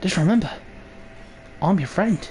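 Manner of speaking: put-on accent, sounding Irish or Australian. After trading jabs with a friend: Irish or Australian accent. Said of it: "I can't tell whether you're trying to do an Irish accent or an Australian one".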